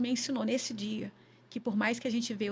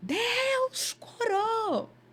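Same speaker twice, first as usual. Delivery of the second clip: play-acted very high shrill shout, "Deus" stretched; 12 semitones higher, 3 dB louder than usual. Retelling a moment in church, holding a sleeping child: retelling a shout. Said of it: "eu dei um grito".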